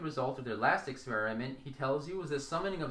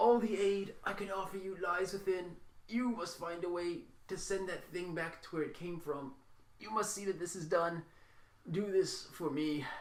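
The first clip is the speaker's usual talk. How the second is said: croaking dying man's voice; 4 semitones higher than usual. Narrator voicing a man in bed addressing the group, croaking. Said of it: "he croaks".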